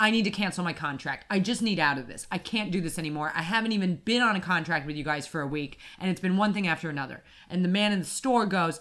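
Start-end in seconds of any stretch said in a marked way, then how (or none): none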